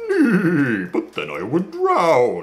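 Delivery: high "nay" drawn out like a horse neigh. Luggage, told to act like a horse, answers: Luggage neighing. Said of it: "if you keep neighing in front".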